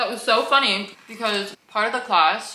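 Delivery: speaking with mouth full, while chewing. Speaker eating crackers starts a story about a class, talking with mouth full. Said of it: "it's so rude to eat with my mouth full".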